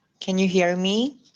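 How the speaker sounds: ordinary talk, nothing marked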